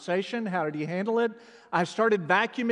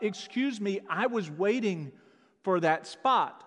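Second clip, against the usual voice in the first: ordinary delivery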